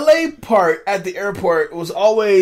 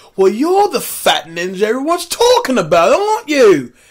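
higher, louder bad British accent. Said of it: "Your British accent is terrible".

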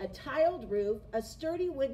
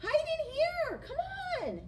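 very high, urgent cry. The third little pig sees his brothers chased by the wolf, crying out. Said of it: "cried the third little pig".

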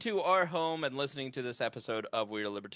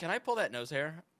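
usual speaking voice

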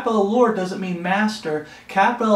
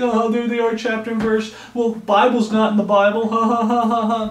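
put-on derisive, scoffing voice with jeering ha-ha laugh; 3 semitones higher than usual. Imitating people who mock saying chapter and verse: imitating mocking people. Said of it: "And they're mocking us".

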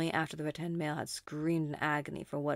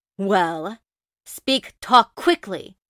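furious, impatient, enraged, shrill, very loud shouting; 5 semitones higher, 16 dB louder than usual. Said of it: "obviously enraged".

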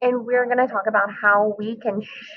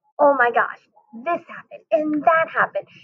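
thrilled, excited gush, voice shooting up high; 4 semitones higher than usual. Showing what real excitement sounds like, unlike sounding mad: an excited high-pitched voice. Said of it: "You can hear how high pitch my voice gets".

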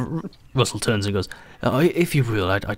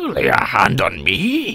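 put-on pirate voice, much higher and slower; 8 semitones higher, 6 dB louder than usual. Game master voicing a dwarf captain reacting to a player's hand: put-on pirate voice. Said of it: "is [name]. And he's wearing a captain's hat. And it looks a bit out of place on him. Looks like it shouldn't belong on his head. And you can see that it's a dwarf. ... Arr, I'm sorry, but I gave the last spots away to [name]. ... That's the most growling toilet brush I've ever heard of".

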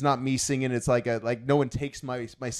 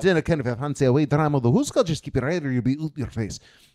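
clumsy, bad put-on Scottish accent; 2 semitones higher, 4 dB louder than usual. Showing the Scottish accent American friends think is good, in a bad Scottish accent. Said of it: "my Scottish accent".

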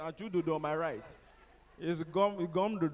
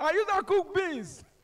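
put-on female shouting, higher and louder; 14 semitones higher, 5 dB louder than usual. Retelling a church answer: imitating a woman shouting. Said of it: "One woman just shouted".

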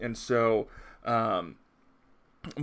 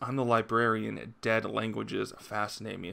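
plain

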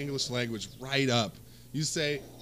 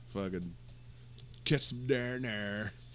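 put-on California accent, lower and quieter; 4 semitones lower, 7 dB quieter than usual. Friends argue about american accents; one tries a california accent. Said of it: "It's gonna be like a California accent".

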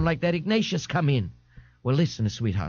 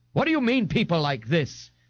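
angry, challenging, demanding tone; 3 semitones higher than usual. Responding to a tearful woman's remark, a man asks angrily. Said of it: "Ignatius asked angrily".

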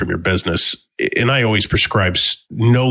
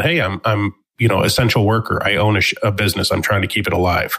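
usual speaking voice

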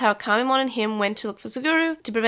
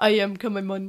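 put-on cute little creature voice; 2 semitones lower than usual. Telling a friend how the character talks in the dub, doing Kamimon voice. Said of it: "he talks like this. It's cute".

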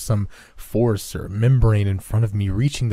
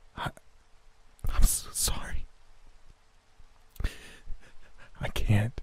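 very slow, barely-there whisper through tears; 10 dB quieter than usual. Narrator answering a woman being dragged away, in a tearful whisper. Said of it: "I was little more than a tearful whisper".

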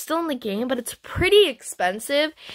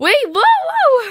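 sudden shrill cry, voice jumps very high, whoa drawn out; 11 semitones higher, 7 dB louder than usual. Mid-trade as a player darts away, suddenly high-pitched voice. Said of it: "my voice just went very high pitched".

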